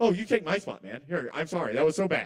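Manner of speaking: put-on, laid-on, over-apologetic sorry tone. Retelling an over-apologetic bit done to a rude man: mock over-apologetic. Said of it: "I'm kinda doing a bit".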